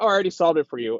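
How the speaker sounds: self-satisfied, pleased-with-himself voice. Recapping a story, quoting Damien's line to John, mock-smug Damien impression. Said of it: "Damien just being kind of smug".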